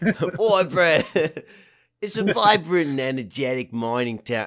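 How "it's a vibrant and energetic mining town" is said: Australian accent creeping in, louder. Trying out accents on the same line, slipping into an australian accent. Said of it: "it's so hard not to go Australian".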